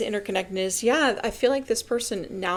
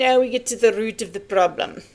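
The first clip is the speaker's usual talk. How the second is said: loud, put-on attempt at a Russian accent; 5 dB louder than usual. Interpreting a reading for someone, in a best-effort Russian accent. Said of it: "in my best Russian accent".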